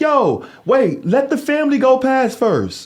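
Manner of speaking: acted-out man's holler, very high and very slow. Retelling how a neighbor came out of the building: imitating a man yelling. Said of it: "He started yelling".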